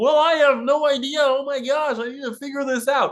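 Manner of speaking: squeaky, very high, puppet-style cartoon frog voice. Acting out a panicked apocalypse scene at the Muppet Theater: Kermit the Frog voice. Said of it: "And Kermit's just gonna be like".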